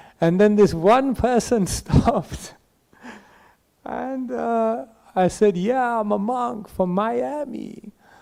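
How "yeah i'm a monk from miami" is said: fake American accent with Miami drawn out. A monk retells answering a stranger who stopped, in a put-on american accent. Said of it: "so I started doing American accents".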